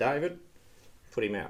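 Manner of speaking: plain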